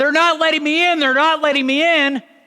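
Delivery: very high yell. Retelling how the father kept yelling while stuck in traffic: imitating dad yelling. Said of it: "all he kept yelling was".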